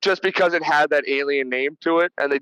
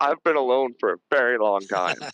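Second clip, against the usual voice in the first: put-on quivering voice, lower; 4 semitones lower than usual. Retelling a movie scene where the doctor answers Ripley: imitating Clemens, lip quivering. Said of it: "his whole lip quivers".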